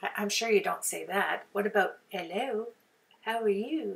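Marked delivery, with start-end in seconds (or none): 2.1-4.0 slow, put-on British accent. Trying out a greeting to put on the wooden letters, in a mock british accent. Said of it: "I love British accents too".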